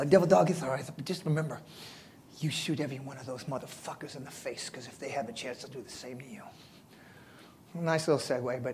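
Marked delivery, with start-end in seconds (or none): 0.1-6.4 put-on lisping voice, lower and quieter. Retelling what Colonel Mattis told him after he stood up: Mattis impression with a lisp. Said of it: "'cause he's got a little bit of a lisp".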